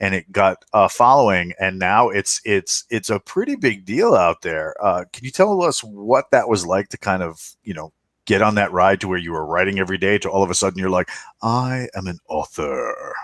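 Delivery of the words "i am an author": very slow, very posh put-on drawl. Quoting an imagined moment of suddenly becoming a writer: put-on posh accent. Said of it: "still working on that very posh accent".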